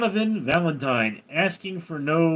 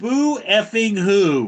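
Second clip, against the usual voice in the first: slow, drawn-out, loud, high mocking jeer. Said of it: "we're like".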